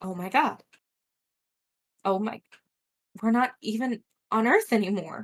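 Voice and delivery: mumbled quietly under the breath. Voicing her as it dawns on her, deflating in the wagon, muttering under her breath. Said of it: "she like mutters under her breath".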